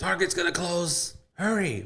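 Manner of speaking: very high, shrill, nagging holler. Retelling how mom yelled at dad to hurry: imitating mom yelling. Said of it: "my mom, like, yelling at my dad".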